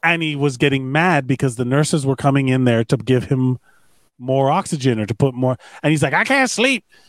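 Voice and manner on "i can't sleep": very high-pitched put-on Southern twang. Quoting a man angry at nurses bringing oxygen: put-on Southern accent. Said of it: "I gave him a southern accent".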